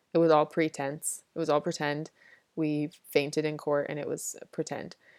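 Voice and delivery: ordinary talk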